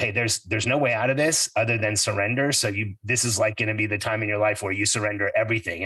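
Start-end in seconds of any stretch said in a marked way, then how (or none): none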